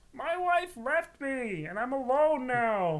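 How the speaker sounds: put-on sad voice. Doing a sad Ray Romano impression for the others. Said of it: "It's just Ray Romano, and he's sad all the time".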